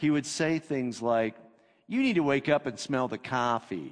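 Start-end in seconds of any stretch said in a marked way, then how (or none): 1.9-3.9 irritating, dismissive, swooping, annoying sing-song. Recalling a man who always disagreed with him, in a mocking impression of an annoying guy. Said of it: "I'm going to try to say it like he says it".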